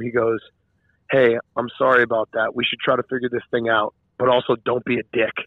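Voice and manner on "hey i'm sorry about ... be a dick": whispering. Retelling what someone whispered to another on the way out: imitating someone whispering. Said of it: "he whispered to him".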